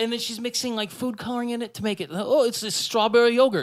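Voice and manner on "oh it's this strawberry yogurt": weird, warped, put-on Australian accent. Imitating a prank video woman describing her food: weird Australian via John Travolta accent. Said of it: "weird Australian via John Travolta accent".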